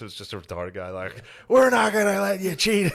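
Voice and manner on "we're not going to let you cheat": shrill, very high, raised protesting yell. Retelling what a man at a meeting yelled: imitating someone yelling.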